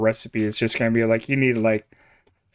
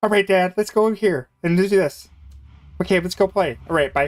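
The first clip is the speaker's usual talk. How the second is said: hyperactive, rapid, high-pitched chattering dog voice; 8 semitones higher than usual. Imagining how their border collie would talk, hyperactive fast dog voice. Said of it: "really hyperactive, fast voice".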